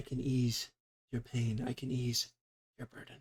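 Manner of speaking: earnest, sincere, soft half-whisper. She looks at you without smiling and speaks, half-whispered, sincere. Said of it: "she kind of whispers".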